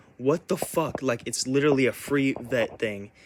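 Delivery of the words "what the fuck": hurt, crushed, enraged, high, furious blurt. Retelling confronting mom in her room: retelling an angry outburst. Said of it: "I was so fucking angry".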